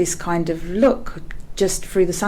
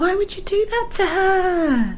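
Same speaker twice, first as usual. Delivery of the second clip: very high put-on woman's voice, "her" drawn out; 13 semitones higher than usual. Retelling what a woman said to the speaker: imitating her voice. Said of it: "I'll do an impression of her".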